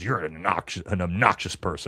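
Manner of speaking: put-on snappish, curt tone. Retelling how the president answered a reporter's question: imitating the president snapping. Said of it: "he snaps at her and goes".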